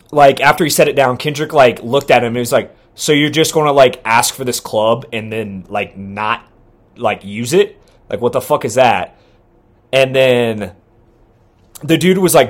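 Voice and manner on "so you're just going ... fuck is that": usual speaking voice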